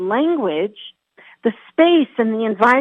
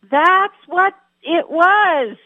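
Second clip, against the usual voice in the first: high-pitched, play-acted, called-out yell; 7 semitones higher than usual. Retelling a shark scare at the bay, acting out their yell to a friend. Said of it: "I yell out to my friend".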